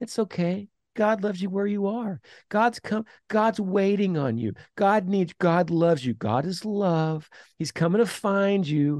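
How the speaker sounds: sarcastic mock preachy tone. Speaker mocking what cultural Christianity says about God, mocking imitation. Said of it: "You can hear the inflection in my voice".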